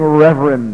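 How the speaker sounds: heavy stress on reverend with a rolled R. A preacher mimics strangers greeting him, stressing 'reverend' with a rolled R. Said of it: "they put an emphasis on that".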